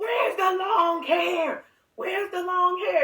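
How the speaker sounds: put-on high-pitched, demanding screaming. Retelling screaming at a man at the police station: retelling a scream at someone. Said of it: "I started screaming at the man".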